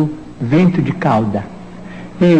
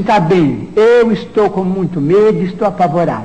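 ordinary delivery

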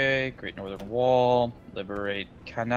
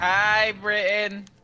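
high, goofy, silly cartoon kid voice; 8 semitones higher than usual. During a game, echoing another player's greeting in a silly cartoon kid voice. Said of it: "You sound like Sheen from Jimmy Neutron".

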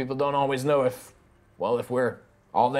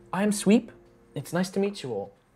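woman's voice; 6 semitones higher than usual. Narrating a game scene, voicing a little Warforged lady greeting guests. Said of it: "the little Warforged lady is like".

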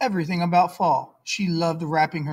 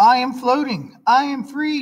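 high, loud, warbling, trilled voice; 7 semitones higher, 5 dB louder than usual. Narrator reads Susie's line as she trips over Emily: trilled. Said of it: "trilled Susie".

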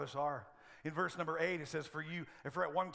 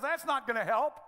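high, loud sarcastic jab; 8 semitones higher, 7 dB louder than usual. Retelling a joke about a wife watching her husband weigh himself: imitating a sarcastic wife. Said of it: "so she's kinda, you know, sarcastic".

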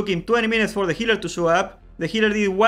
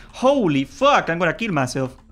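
usual speaking voice

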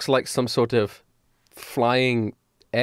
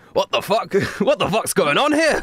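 put-on Scottish character accent; 7 semitones higher than usual. Playing a character who confronts a strange group: scottish accent. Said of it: "fuck it, he's Scottish".

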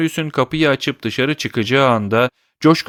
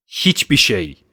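fierce, harsh determination; 3 semitones lower than usual. Marius answers Monsieur Gillenormand's question about his earnings with harsh, fierce determination. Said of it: "sert ve vahşi bir kararlılıkla".

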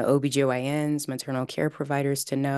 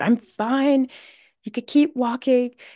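play-acted, shrill, furious, high-pitched yell; 10 semitones higher, 6 dB louder than usual. Retelling a woman checked on by health providers, imitating her mock-angry yell. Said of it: "she just gets angry and yells out".

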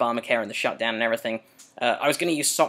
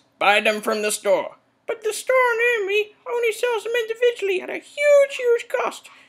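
very high, swooping, comic puppet voice; 4 dB louder than usual.

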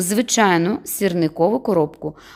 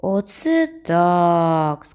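drawn-out, drawling delivery; 2 semitones lower than usual. Reading a boy's reply to his friend's report, drawn-out. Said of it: "сказав протяжно Сергійко".

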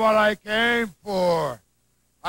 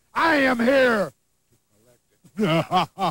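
nasty-sounding voice. Speaking as an unseen voice to an opponent: nasty-sounding voice. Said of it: "from the tone of his voice, he's got to sound like a very nasty individual".

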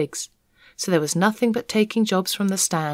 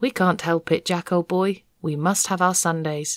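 plain reading voice

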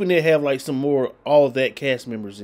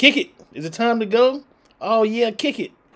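put-on very high, squeaky old man voice; 9 semitones higher than usual. Retelling a sketch where two performers dress as old men: imitating Kenan and Kel's old men. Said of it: "They dress up like these two old men. And he be like".

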